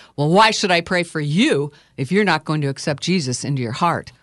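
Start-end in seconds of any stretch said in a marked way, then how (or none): none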